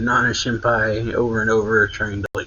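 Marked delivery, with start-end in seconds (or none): none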